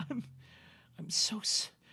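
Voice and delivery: whispered, breathy, sobbing, broken words. Narrating a woman who slides down the wall to the ground, crying while talking. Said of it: "as she's crying".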